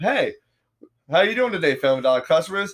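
put-on courteous, polite, professional announcer voice. Retelling a closing-time store announcement over the mic, mock-professional announcer tone. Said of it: "in that professional tone of".

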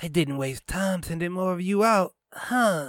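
high, sneering, snickering taunt. The blonde answers a demand to identify themselves, snickering. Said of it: "The blonde snickered".

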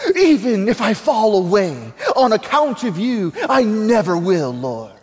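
put-on British accent. Reading the Gospel scene aloud, the speaker gives Peter's reply a British accent. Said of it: "if he has a British accent".

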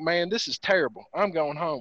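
ordinary delivery

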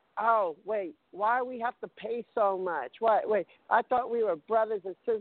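ordinary talk

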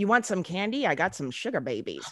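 put-on creepy man voice. Describing a creepy man, the speaker acts out his line in a creepy man voice. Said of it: "His voice, creep stuff".

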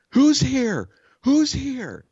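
very high, swooping, drawn-out, repeated yell. Retelling the neighbor calling out from upstairs: imitating someone yelling. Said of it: "She just keeps yelling it".

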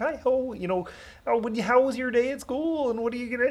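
pitched way up, puppet frog character voice. A parent voicing a frog doll for their kids, Kermit the Frog voice. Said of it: "I'll do his voice".

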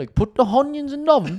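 very high accent that adds and drops H's. Demonstrating how people add and drop h's, accent adding and dropping h's. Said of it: "People will like add H's and like take some away".

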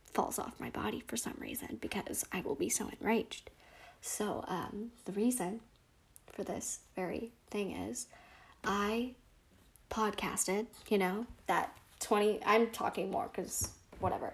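soft, mellow voice.

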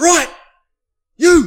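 high, loud yell. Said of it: "he's just like".

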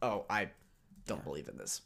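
scornful, swooping, aggressively dismissive, brushing-off tone. Retelling a character's reaction to praying: imitating an aggressively dismissive tone. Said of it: "aggressively dismissive".

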